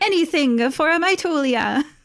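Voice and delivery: put-on Italian accent, slow and high-pitched. Voicing a character who loads the party up: Italian accent. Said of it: "I love your Italian accent".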